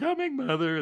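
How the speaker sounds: very high, squeaky voice, way up high. Recalling an old show's opening call, doing Henry Aldridge's squeaky voice. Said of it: "that squeaky voice".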